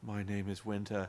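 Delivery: very low, very soft, slow, flat robotic alien monotone. Retelling how she introduced herself, imitating a monotone robot voice. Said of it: "she was talking like a robot".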